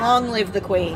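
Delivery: ordinary talk, nothing marked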